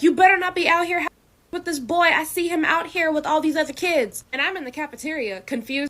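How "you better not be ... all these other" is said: put-on scream, higher pitch, louder. Retelling a phone call where mom starts screaming at her: imitating mom screaming. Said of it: "starts screaming at me".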